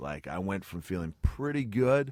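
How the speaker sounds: usual speaking voice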